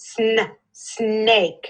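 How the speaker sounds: slow, drawn-out, stretched-out sounded-out pronunciation. Modeling a word for a learner during a spelling lesson, sounding out slowly. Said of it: "Say it slow".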